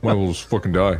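mocking put-on voice. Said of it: "don't say it like that".

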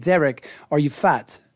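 put-on British accent. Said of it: "It's that British accent".

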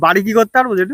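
ordinary delivery

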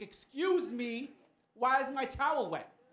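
high, loud, slow indignant tone. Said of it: "I'm like".

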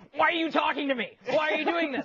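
acted, high, frantic, freaked-out panicked outburst. Retelling a friend's coffee story, imitating someone freaking out. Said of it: "he said he'd be freaking out".

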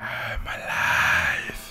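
eerie, spooky, really creepy ghost voice. Retelling a text from a game app's ghost: really creepy voice. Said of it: "in a really creepy voice".

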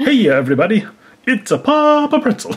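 very high-pitched, hammy, put-on Italian accent. Showing off a cuckoo clock, voicing Papa Pretzel with an Italian accent. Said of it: "he's going to sound Italian".

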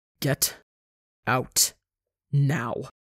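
low, rough growl, spoken word by word. Reading Rambu answering her after she hisses at him: low rough growl. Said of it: "voice low and rough as he growls".

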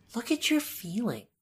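mock concerned woman voice, high and soft cooing.

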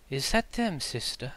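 barely audible, faint, soft close whisper. Voicing an unseen nearby speaker heard only faintly, a faint whisper. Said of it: "you think you hear a whisper".

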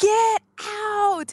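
very high, furious, flipped-out yell. Retelling a Beauty and the Beast scene: imitating the Beast yelling.

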